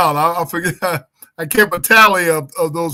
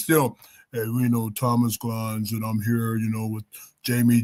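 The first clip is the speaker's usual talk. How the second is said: put-on sexy soul-show host voice, quieter; 8 semitones lower, 10 dB quieter than usual. Speaker practicing others' voices, doing Thomas Glines sexy Soul Train voice. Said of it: "Thomas got that that soul trained sexy voice".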